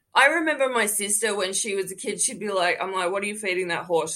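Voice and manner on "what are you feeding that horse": normal talking voice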